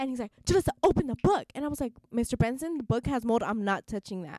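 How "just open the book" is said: raised, pitched-up, barked yelling. Speaker retells a man yelling at him: retelling a yell. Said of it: "he yelled at me".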